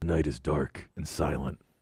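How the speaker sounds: very low, deep superhero voice. Reading a listener email aloud, trading sentences: Batman voice. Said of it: "can you read this with a Batman voice?".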